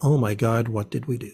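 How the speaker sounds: ordinary delivery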